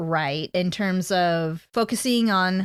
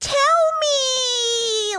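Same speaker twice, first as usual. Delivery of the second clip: put-on high whiny kid voice, me drawn out. Retelling Zuko's words to Iroh, like a little kid. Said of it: "like a little kid".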